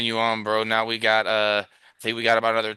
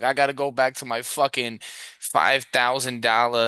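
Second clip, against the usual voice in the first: put-on Boston accent. Mocking crying Yankees fans, imitating one: put-on Boston accent. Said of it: "I think that's a Boston accent".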